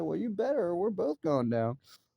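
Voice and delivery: put-on screaming. Recounting a tense moment, you shout a warning at a partner in danger, as a retold yell. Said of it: "And he's screaming".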